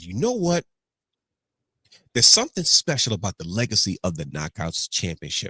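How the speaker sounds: plain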